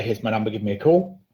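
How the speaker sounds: usual speaking voice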